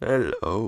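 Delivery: put-on voice sounding like speech played backwards. Retelling how a film character starts talking: imitating a backwards-sounding voice. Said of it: "like, backwards voice".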